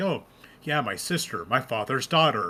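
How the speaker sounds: imitated deadpan, mock matter-of-fact delivery. Praising a villain's line delivery, the speaker quotes him, imitating a deadpan delivery. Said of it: "delivers his lines in such a deadpan manner".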